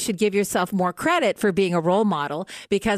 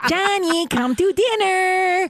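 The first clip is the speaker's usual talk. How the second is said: very high, annoying nagging voice; 10 semitones higher than usual. Speaker shows how their 14-year-old imitates them, doing the teen's mocking impression. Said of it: "My 14-year-old actually does an impression of me".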